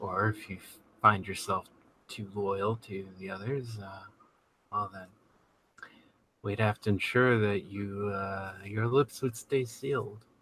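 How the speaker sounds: talking quietly. Game master voicing a character aboard ship, addressing the player: talking quietly. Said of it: "He's talking quietly".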